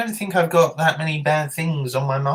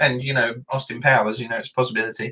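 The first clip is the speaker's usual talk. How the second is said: usual speaking voice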